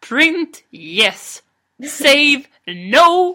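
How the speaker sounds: very slow, loud, stretched-out no. Retelling what a woman said aloud about printing, retelling loud speech. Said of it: "hon sa det så högt också".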